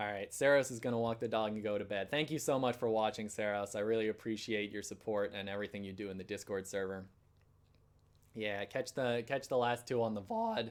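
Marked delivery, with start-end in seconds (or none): 8.6-10.7 cracked voice, breaking mid-line. Saying goodbye to a viewer who is leaving, voice cracking. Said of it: "voice crack there".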